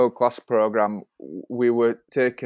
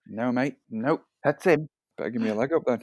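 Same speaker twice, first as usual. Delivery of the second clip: put-on Australian accent; 4 dB quieter than usual. Retelling what he was told about the horse: australian accent. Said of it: "I'm enjoying your Australian accent as well".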